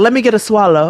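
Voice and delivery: put-on folksy, down-home country grandmother voice. Speaker quotes their grandmother, whom they call very country, imitating a country grandma. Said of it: "My grandmother be like".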